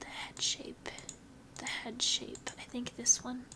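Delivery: whispering to herself.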